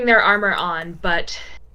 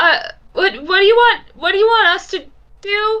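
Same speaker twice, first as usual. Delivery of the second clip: small, very high squeak of a voice; 11 semitones higher, 4 dB louder than usual. Game master voicing a surrendered archer calling to the group, in a little voice. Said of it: "you hear just a little voice go".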